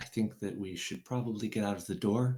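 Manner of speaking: whispered line in character voice. Voicing a character who leans over to a player: whispering in character. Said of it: "leans over and whispers in your ear".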